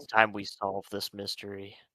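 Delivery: low, very quiet, hushed stage half-whisper. A player character in a mystery role-play game, half-whispering.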